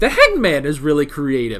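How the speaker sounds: low, soft voice cracking with passion. Praising how creative the stands are, the speaker gets passionate, voice breaking. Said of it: "my voice is breaking".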